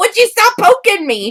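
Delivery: very high-pitched, loud shout. Retelling how Nightmare reacted to being poked: imitating Nightmare yelling. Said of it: "And he's yelling at me".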